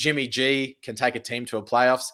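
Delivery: ordinary delivery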